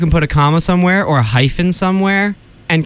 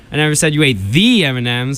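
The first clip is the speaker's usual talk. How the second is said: the stressed with a rising lift. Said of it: "put the emphasis on any different word".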